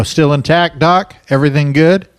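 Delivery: high, cheery, mock casual delivery.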